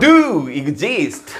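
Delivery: do stressed and slowed in do exist.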